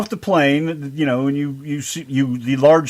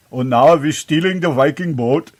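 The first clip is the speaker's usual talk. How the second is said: put-on Swedish accent. In group banter, the speaker slips into a swedish accent. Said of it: "from Sweden all of a sudden".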